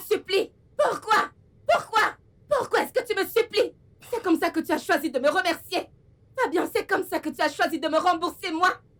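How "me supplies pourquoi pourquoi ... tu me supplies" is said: worked up, upset and agitated tone. Confronting the man who hit her, a woman demands why he begs, agitated.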